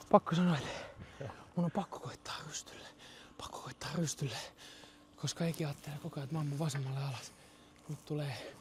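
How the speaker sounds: whispering. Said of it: "Mä kuiskaan tää".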